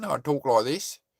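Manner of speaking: put-on Australian accent. New Zealander answering viewers' questions about his accent, demonstrating an Australian accent. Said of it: "If I was Australian".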